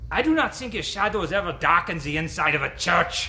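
put-on loud, heavy, thick German accent. Recalling what Dr. Schnabel would say when somebody brought up a commentary, use Dr. Schnabel's thick German accent. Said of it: "would say in his thick German accent".

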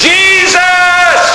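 high, desperate shout, crying out with everything.

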